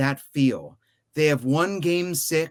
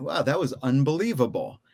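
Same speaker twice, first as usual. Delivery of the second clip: ordinary talk, nothing marked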